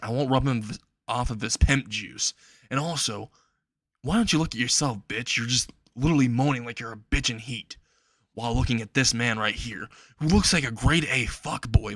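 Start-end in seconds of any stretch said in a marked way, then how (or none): none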